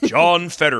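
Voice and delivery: put-on fighting game announcer voice. A co-host repeats a politician's name, fighting game announcer voice. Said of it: "Name like a fighting game announcer?".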